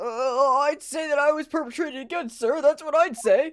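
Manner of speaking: very pathetic put-on male voice. Voicing a game character: extra pathetic guy voice. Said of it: "extra, uh, pathetic, like, guy voice".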